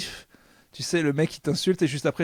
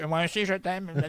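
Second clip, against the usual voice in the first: put-on dumb, mocking voice; 3 semitones higher than usual. After another speaker suggests repeating someone's words in a dumb voice, demonstrating: mocking dumb voice. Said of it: "répéter ce qu'il t'a dit avec une voix de con".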